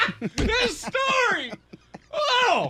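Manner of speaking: high, slow, over-the-top gushing excited shout.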